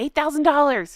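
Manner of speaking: high yelling. Reacting to an outfit's price, yelling into the mic. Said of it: "I can't stop yelling that into the mic".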